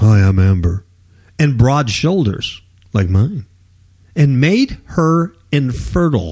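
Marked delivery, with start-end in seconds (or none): 0.0-0.8 loud, deep put-on voice. Describing the voice a game gave its character: deep Amber voice. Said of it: "It gave her a deep voice like this".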